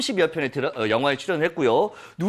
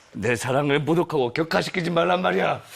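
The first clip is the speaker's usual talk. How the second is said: put-on deep, thick-voiced movie-actor voice. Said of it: "목소리 톤을 보세요. ... 굵은 목소리를 흉내내려고 해도 잘 안 되네요".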